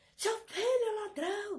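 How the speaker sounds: put-on high, shrill shout. Retelling how she came into the yard and began shouting: imitating someone shouting. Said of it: "começou a gritar".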